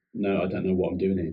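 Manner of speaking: ordinary delivery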